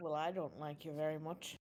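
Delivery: low grumbling under the breath. Voicing a character who grumbles about another: muttering under her breath. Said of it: "Ula mutters under her breath".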